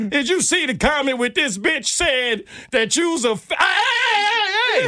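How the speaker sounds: imitated yelling voice. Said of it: "So I'm yelling at him".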